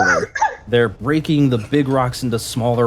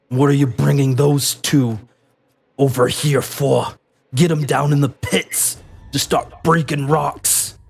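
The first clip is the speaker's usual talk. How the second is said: rough, gruff soldier voice; 3 semitones higher than usual. A game master voices a Crimson Guard stopping two prisoners being brought over, gruff guard voice. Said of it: "as one of these Crimson Guards approach".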